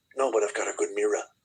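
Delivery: put-on New York City accent. Quoting Epstein's joking reply from a clip, Epstein impression, New York accent. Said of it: "In his like New York accent".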